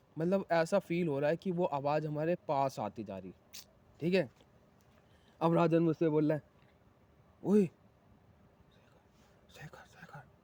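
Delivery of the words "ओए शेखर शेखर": hushed, secretive, whispered call. Retelling how someone secretly called out to him, spoken quietly. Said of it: "चुपके से बोला हूँ मैं".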